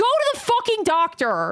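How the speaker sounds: drawn-out, stretched delivery with swinging pitch. Asked by chat to yell at them, the streamer addresses viewers, yelling. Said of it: "Can you yell at us to go to the doctor?".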